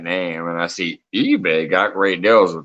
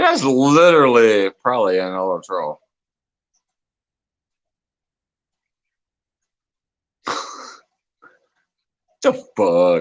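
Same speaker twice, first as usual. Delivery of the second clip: laughing through the words while talking; 2 semitones higher than usual. Reading a comment aloud again, laughing while talking. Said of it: "I'm laughing".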